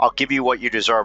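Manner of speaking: usual speaking voice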